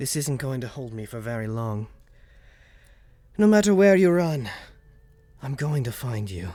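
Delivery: disembodied, ringing, echoing voice. Narrator voicing a voice that echoes through the players' heads. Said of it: "You guys hear a voice echoing through your head".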